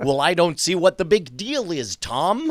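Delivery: Midwest American accent. Joking with another speaker about an actor's accent: Christopher Eccleston's American accent impression. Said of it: "really good impression of Christopher Eccleston's American accent".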